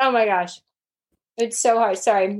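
speaking with mouth full of food. Speaker taking a bite of chicken mid-conversation, talking with mouth full. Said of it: "My mouth is full of chicken".

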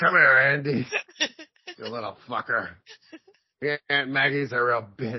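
put-on menacing, swooping drunken father voice. Describing a man's scary voice, doing a put-on drunk-dad voice. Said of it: "sounds like a fucking drunk dad".

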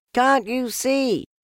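very high, shrill, squealing shout. Reading a story aloud, a small animal protesting: shouting. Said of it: "shouted Piglet".

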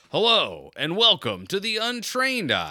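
high, showy, sing-song announcer voice. Showing how to speak as if across the house: loud projected voice. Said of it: "Just project like this".

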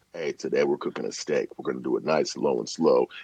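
deep, very low, very quiet hushed murmur. Recording cooking audio while his daughter naps, he speaks in a deep quiet voice. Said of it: "that's where the deep voice came".

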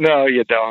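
ordinary talk, nothing marked

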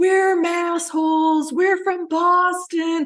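put-on, very high, very slow, lung-busting scream. Retelling a tourist group on a river trip: imitating screaming at the top of lungs. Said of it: "started screaming at the top of their lungs".

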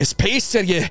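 very high put-on hippie Scottish accent. Asked how to do a hippie scottish accent, a speaker tries one: hippie scottish accent. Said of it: "how do you do a hippie freaking Scottish accent?".

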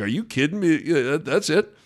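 condescending, scoffing, chuckling half-laugh of disbelief. Retelling what a Seton Hall fan said on seeing McDermott, imitating a condescending chuckle. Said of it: "almost condescending and chuckled".

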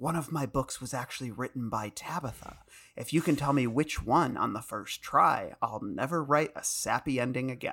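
soft-spoken, whispered put-on character voice. Reading a scene Jesse wrote, King whispering a secret: soft-spoken Dickensian Stephen King voice. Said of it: "soft-spoken, uh, Dickensian King".

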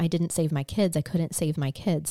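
ordinary talk

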